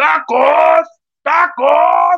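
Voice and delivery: high, loud wailing shout, close to crying. Doing a requested imitation of a taco vendor's cry: Lady Tacos de Canasta shout. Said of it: "Lady Tacos de Canasta forma parte cuando dice".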